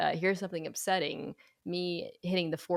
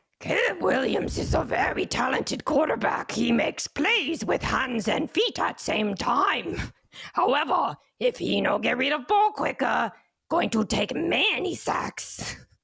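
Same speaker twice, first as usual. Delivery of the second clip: big, loud delivery with pitch raised; 8 semitones higher, 7 dB louder than usual. Asked about Caleb Williams' first year, answering as Cookie Monster. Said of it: "expectations should be in year one with Cookie Monster".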